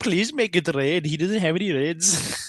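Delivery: put-on Indian English accent throughout. Retelling a game of Uno against an opponent, in a put-on Indian accent. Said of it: "I was doing like the Indian accent".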